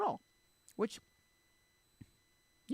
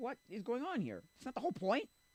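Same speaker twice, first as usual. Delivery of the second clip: high, baffled, incredulous disbelief. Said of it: "I was like".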